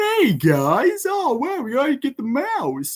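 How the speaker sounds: very high, dopey, swoopy sing-song voice. Mocking how a cartoon cat sounds in the show: imitating Butch's stupid-sounding voice. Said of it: "being so, like, stupid".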